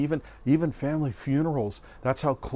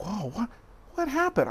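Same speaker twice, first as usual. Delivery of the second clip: mock bewildered, caught-off-guard tone with swooping pitch; 9 semitones higher than usual. Recounting a phone call where the caller turned sarcastic: retelling own confused startle. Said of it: "I was like".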